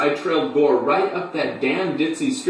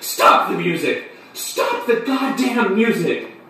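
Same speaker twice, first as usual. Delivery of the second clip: crying out, pitched high; 5 semitones higher than usual. Narrator retelling facing the clown, screaming. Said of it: "I screamed".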